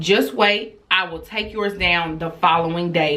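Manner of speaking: normal talking voice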